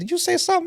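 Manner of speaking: put-on very high country accent, mumbled, mouth barely open. Describing how country people talk without moving their tongue: imitating a country accent, mouth barely open. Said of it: "some of these guys don't even move their tongue".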